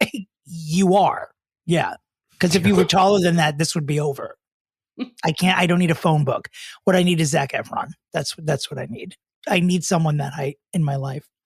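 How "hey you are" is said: mock dry, flat, expressionless deadpan. Retelling answering his sarcastic remark, retelling a deadpan reply. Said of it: "I looked at him deadpan and I said".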